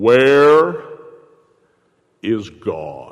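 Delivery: deep, low preacher voice. Telling a story, voicing the pastor questioning a little boy: pastor's deep voice. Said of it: "the pastor with his deep voice said".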